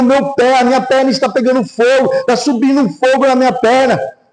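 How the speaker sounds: put-on half-shouted, urgent mild yell. Recounting how a man yelled at his desk, imitating someone shouting. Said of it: "começou a gritar e bater o pé".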